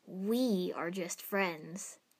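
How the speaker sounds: said firmly, settled and decided. He speaks to Ino after pointing a cigarette at her, firmly. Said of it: "he said firmly".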